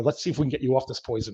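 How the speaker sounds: quiet muttered whisper. Retelling what the doctor said at a follow-up test: imitating a whisper under the breath. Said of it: "he kinda whispered under his breath".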